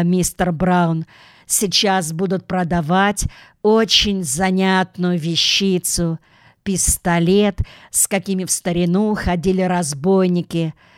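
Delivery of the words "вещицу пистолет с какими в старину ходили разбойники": ordinary delivery, nothing marked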